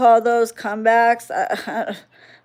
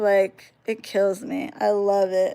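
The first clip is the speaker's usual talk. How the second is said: usual speaking voice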